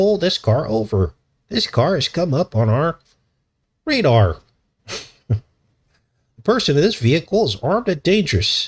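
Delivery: synthetic computer voice. Speaker voices the little robot that would speak in the car: robot computer voice. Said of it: "Like a computer voice".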